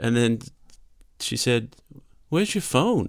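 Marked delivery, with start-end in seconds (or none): 2.3-3.1 put-on American accent with pitch raised. Retelling what a coworker asked: imitating an american accent. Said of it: "I'm not just putting on the accent".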